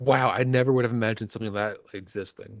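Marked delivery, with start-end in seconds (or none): none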